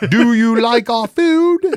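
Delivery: very high, loud, small British voice. Imagining a sumo wrestler's phone translating for him, in a little british voice. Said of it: "got a little British voice".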